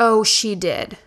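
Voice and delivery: ordinary talk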